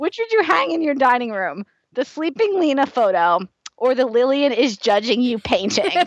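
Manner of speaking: words breaking up with giggles, laughing throughout. Reading out a question, laughing while talking. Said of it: "I'm legitimately crying".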